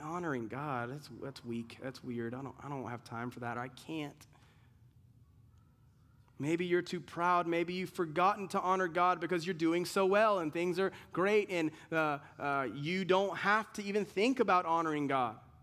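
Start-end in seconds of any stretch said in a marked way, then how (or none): 0.0-4.3 low, soft, apathetic, dismissive tone. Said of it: "like, apathetic to God, and you're like".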